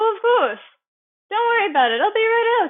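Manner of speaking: very high, bright, cheery sing-song. Telling a story where a coworker is called out to help: imitating Marissa's cheery voice. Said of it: "cheery voice saying".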